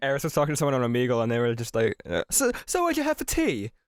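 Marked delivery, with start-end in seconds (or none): 2.3-3.7 very high, really bad fake British accent. Retelling what someone on Omegle asked: bad British accent.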